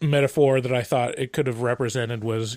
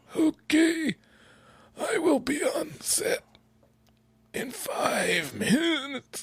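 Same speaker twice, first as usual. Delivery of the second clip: eerie, creepy, very high character voice; 4 dB quieter than usual. Retelling how an actress stayed in character in her dressing room, imitating the actress's voice. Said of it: "only using that voice".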